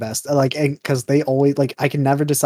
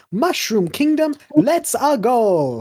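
very high, very slow, swooping sing-song; 10 semitones higher than usual. Retelling a movie trailer line that Chris Pratt said: imitating Chris Pratt as Mario. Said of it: "Exactly like that".

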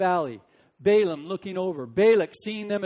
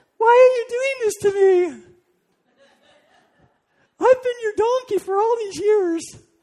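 very high, loud put-on female donkey voice; 7 dB louder than usual. Telling a joke where the beaten donkey finally speaks to its owner: female donkey voice. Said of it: "That's my female voice".

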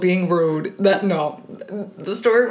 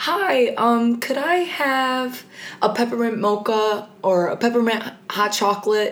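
polite, put-on customer-service voice; 4 semitones higher than usual. Retelling ordering at a drive-through, in a put-on customer service voice. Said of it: "I put on my best customer service voice".

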